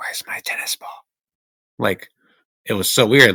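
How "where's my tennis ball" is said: very soft, muttered whisper under the breath. Retelling saying a line quietly to oneself: imitating a whisper under breath. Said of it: "I kinda whispered under my breath".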